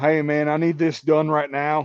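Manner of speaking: put-on North Carolina accent. Imitating a coworker slipping back into his North Carolina accent. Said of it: "go back to his sister fucker North Carolina accent".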